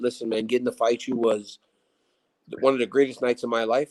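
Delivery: ordinary delivery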